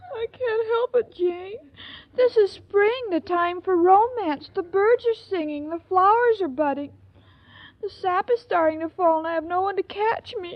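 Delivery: tearful, crying, weeping all the way through. Irma answers Jane, who is comforting her, crying. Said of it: "don't cry, honey".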